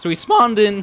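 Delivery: squeaky break, voice cracking up high. Describing spawning in during a run, voice cracking. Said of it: "wow, voice crack".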